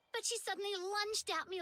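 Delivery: normal talking voice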